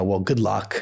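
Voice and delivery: faintly condescending, patronizing tone. Retelling what a rival founder said at a dinner: imitating Jack condescendingly. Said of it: "almost a little condescendingly".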